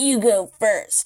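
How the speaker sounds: put-on sounds like an old hag. Recapping a scene, voicing Ashley reaching out to Leon: Ashley as an old hag. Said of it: "She literally sounds like an old hag".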